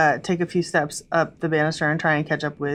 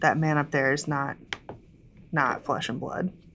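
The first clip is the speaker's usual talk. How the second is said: soft, hushed half-whisper under the breath; 6 dB quieter than usual. Speaking in character, warning Kithris about the man ahead: half-whispering in character. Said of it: "and I whisper to Kithris".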